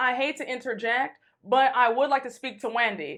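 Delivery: ordinary delivery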